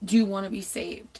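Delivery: mock whispering. Retelling how a lady behind her at church asked: imitating someone whispering. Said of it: "she's whispering in my ear".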